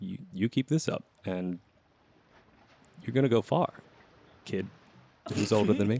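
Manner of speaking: secretive, confidential stage whisper. Leaning in close so no one else hears, praising a younger crew member: hushed voice. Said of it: "he leans in close so no one else can hear".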